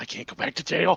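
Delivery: muttering under the breath. A tabletop player speaks as their character spotting the guards, muttered under his breath. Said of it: "under his breath, he's like".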